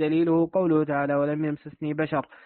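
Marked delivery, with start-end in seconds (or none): none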